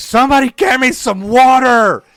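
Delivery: piercing, very high, shrill, full-volume scream. Retelling a reaction as the show went off air: imitating Rhea screaming. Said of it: "she's screaming".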